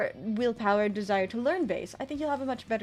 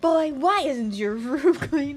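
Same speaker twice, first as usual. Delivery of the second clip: loud, scolding dad voice; 3 semitones higher, 7 dB louder than usual. Answering a viewer message, the speaker does the daddy voice. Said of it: "that's the daddy voice?".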